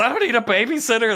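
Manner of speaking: mock very high, shrill, shrieked outburst. Retelling how a man sent away yelled: imitating someone yelling. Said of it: "He literally yells".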